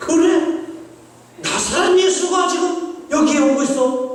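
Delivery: high, loud, shocked, startled cry.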